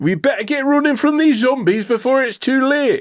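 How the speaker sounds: very high, poor attempt at Geordie accent. Asked to try it again, the speaker redoes the line, bad Geordie accent. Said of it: "Try it now".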